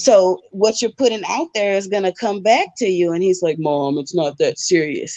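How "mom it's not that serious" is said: put-on young boy's child voice, plain conversational talking. Retelling her son's reply to her advice: imitating her son's voice. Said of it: "your imitation of him is killing me".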